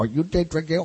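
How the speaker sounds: put-on slight Arabic accent. Retelling being found by a stranger in a Haitian city, slight Arabic accent. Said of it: "with a little Arabic accent".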